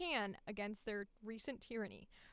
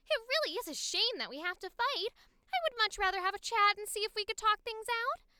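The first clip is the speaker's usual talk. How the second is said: put-on voice, high-pitched and a touch louder; 9 semitones higher, 6 dB louder than usual. Trying out a voice for a character, high Harley Quinn-like voice. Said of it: "I'm gonna go high. I'm gonna do like a almost like a Harley Quinn, but without the accent".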